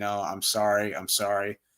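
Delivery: put-on desperate begging voice. Retelling a show scene where a character is attacked by sea creatures: imitating someone begging for his life. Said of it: "he's begging for his life".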